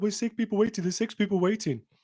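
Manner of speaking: put-on fast, high, panicky Birmingham accent. Retelling what someone said when they tried to join last night, in a Brummie accent. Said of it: "But in a Brummie accent".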